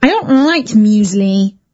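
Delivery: grumbling, sulky. Daisy answers when her mum offers muesli instead of breakfast; grumpy. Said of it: "grumped Daisy".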